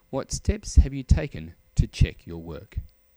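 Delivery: ordinary delivery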